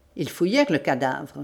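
ordinary delivery

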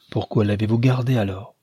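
plain reading voice

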